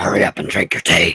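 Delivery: very low, evil-sounding gruff man voice. Wishing she could do a really gruff man voice, the speaker tries one out. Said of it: "That just sounds evil".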